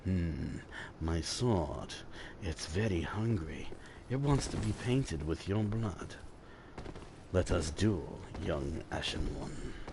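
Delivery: put-on extra-deep voice, very hushed and slow. Showing how he would voice a sword-wielding character: extra deep put-on voice. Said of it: "make his voice a little bit deeper while saying it like that".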